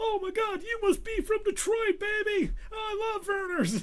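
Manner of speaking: hyped, high-pitched shout. Retelling how a brother met Dickie V at a basketball game, in a Dickie V impression. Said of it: "Nice imitation".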